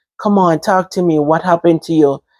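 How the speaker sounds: plain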